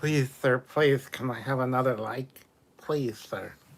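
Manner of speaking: loud, fake, grovelling pleading voice. Joking about asking viewers for likes: mock begging. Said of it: "I wasn't even begging that hard".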